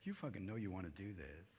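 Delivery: very soft, very low, hushed salesman voice. Demonstrating how the devil talks, a quiet marketing voice. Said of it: "It's more like a marketing kind of voice".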